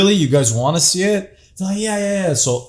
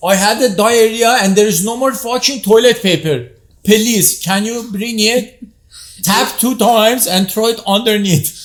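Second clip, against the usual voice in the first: put-on Persian accent in English, high; 7 semitones higher than usual. Retelling a prank call to Home Depot made as a Persian guy, Persian accent. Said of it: "I've called Home Depot as a Persian guy".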